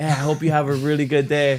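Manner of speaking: sincere, earnest, heartfelt delivery full of conviction. Imitating how a shop worker wishes customers well: imitating Drew, said with conviction. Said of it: "but he's just like".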